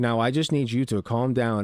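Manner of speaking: mock overly composed, unruffled, very calm tone. Mocking an imagined calm reply to an angry partner: mock very calm voice. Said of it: "very calmly with your man brain".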